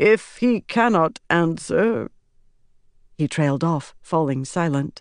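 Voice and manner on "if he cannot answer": high, slow solemn prophetic intoning, trailing off. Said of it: "He speaks".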